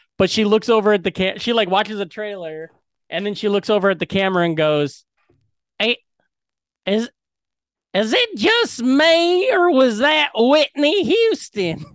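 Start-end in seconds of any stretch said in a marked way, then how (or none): 5.8-11.8 put-on old Southern lady voice, higher. Retelling what a little girl said after a trailer: imitating an old Southern lady voice. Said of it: "the voice of, like, an old Southern lady".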